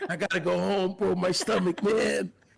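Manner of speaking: acted strained, effortful voice. Retelling a phone call where the friend sounded labored: imitating Maddie sounding labored. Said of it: "you sounded labored".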